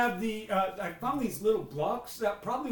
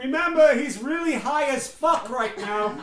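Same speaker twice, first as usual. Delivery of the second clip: loud, drawn-out yell; 4 semitones higher, 8 dB louder than usual. Calling down a warning to others below: yelling down. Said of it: "And I just yell down".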